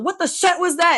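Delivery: put-on very loud, high-pitched yelling in German accent. Describing the strict grandmother reacting to a dropped toy, imitating yelling in German accent. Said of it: "in her German accent, she's gonna be yelling".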